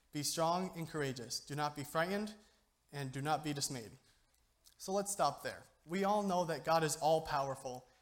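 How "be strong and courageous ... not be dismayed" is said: ordinary talk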